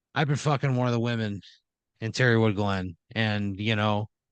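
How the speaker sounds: ordinary delivery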